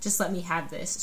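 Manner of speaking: ordinary delivery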